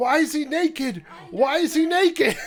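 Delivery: mock high, held-in cry, repeated twice. Retelling a night-vision basement video: imitating someone screaming. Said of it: "Tristan just screams".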